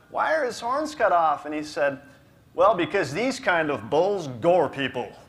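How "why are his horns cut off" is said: acted uneasy, nervous, pitched-up voice. Retelling asking the guy beside a huge bull, acting out a nervous voice. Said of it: "just in a nervous voice".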